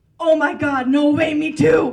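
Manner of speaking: put-on very loud, drawn-out, slow Scottish accent. Retelling what a Scottish lady on a bar crawl said: Scottish accent. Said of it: "I have a really good Scottish accent".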